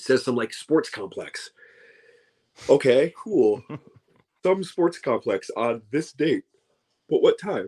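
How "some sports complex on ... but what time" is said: talking through a yawn. A speaker complaining about show listings with no time given, yawning. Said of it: "sorry, I keep yawning".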